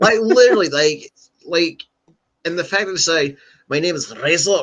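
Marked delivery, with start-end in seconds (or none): 3.7-4.6 imitated Latin American accent.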